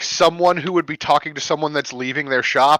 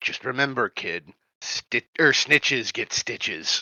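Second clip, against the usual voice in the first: rough, low, gruff thuggish tough-guy voice; 5 semitones lower, 8 dB quieter than usual. Speaker imitates another character's line, in a gruff thug voice. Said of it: "gruff sounding like thug voice".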